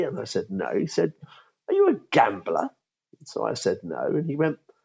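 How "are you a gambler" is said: very posh, upper-class put-on voice. Retelling what a senior partner of another law firm asked him, in a very posh voice. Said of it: "in a very posh voice".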